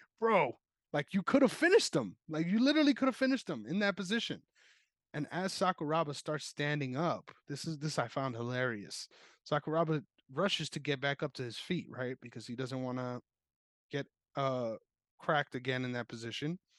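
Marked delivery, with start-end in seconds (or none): 0.2-4.4 high, loud screaming. Retelling what was screamed at a fighter during the fight: imitating own screaming. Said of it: "I was screaming".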